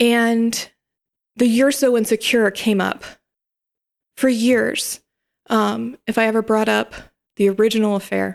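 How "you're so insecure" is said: ordinary talk, nothing marked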